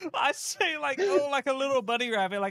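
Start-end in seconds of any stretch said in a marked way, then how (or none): 1.0-2.4 put-on bright, delighted, excited, happy exclamation. Retelling own earlier line to the group: retelling an excited, happy line. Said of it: "all excited and happy".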